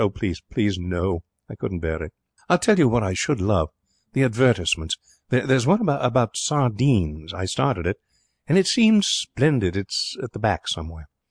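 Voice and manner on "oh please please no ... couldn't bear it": plain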